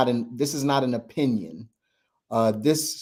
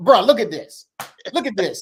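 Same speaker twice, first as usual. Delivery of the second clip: high, put-on angry man voice; 7 semitones higher, 4 dB louder than usual. Mimicking what the listener sends first thing in the morning, put-on angry man voice. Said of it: "he angry man first thing in the morning".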